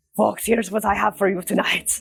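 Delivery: comedic pirate voice with Irish-Scottish accent. Showing how the drag character Porter Starbird talks when hosting: Porter Starbird voice. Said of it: "he kinda talks like this".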